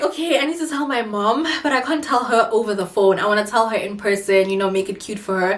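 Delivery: ordinary talk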